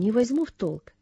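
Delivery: ordinary delivery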